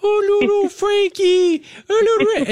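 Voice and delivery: put-on very high baby talk. A dad retells his kid talking to the puppy, imitating high-pitched puppy talk. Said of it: "talking to our puppy in a very high voice".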